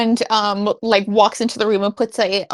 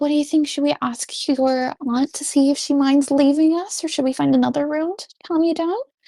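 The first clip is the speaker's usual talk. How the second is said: private-sounding aside, pitched up; 5 semitones higher than usual. Player voicing a character talking privately to another character, speaking quietly. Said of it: "she'll talk to Meadow quietly".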